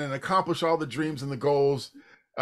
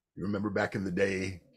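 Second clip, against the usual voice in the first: deep, resonant, rich low speaking voice; 8 semitones lower, 6 dB quieter than usual. Retelling how he started the group's performance: retelling own words in a low voice. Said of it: "I started off in, like, a low voice".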